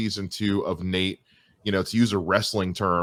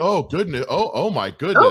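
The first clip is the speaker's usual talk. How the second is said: mock Canadian accent; 8 semitones higher, 5 dB louder than usual. Retelling a broadcaster's on-air reaction, in a stereotypical Canadian accent. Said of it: "the stereotypical Canadian".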